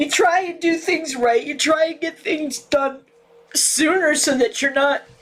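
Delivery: tearful, sobbing voice. Venting furiously to the audience about things going wrong, tearful and crying. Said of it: "I ugly cry".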